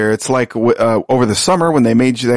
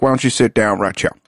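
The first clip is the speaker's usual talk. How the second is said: East Texas accent with a Louisiana tinge; 2 semitones lower than usual. Showing how people in East Texas talk: East Texas accent, Louisiana tinge. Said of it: "a little bit of Louisiana bleeding over the border".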